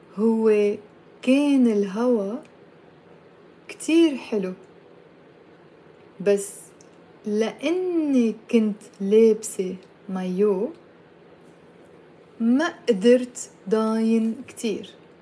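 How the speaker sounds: spoken at a slow pace. Teaching a language lesson, saying a long sentence for learners to repeat, said slowly. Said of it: "I'll say it slowly".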